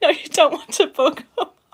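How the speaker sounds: laughing while talking. Explaining a step with a Dremel drill: laughing while talking. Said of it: "I'm just losing it here".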